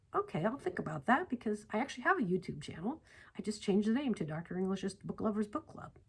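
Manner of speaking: plain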